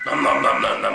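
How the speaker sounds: loud monster voice, gobbling the words.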